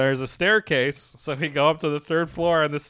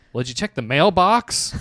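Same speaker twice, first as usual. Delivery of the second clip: put-on annoyance, louder; 3 dB louder than usual. Retelling a woman answering a request for the hotel, imitating an annoyed woman. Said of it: "She's all annoyed".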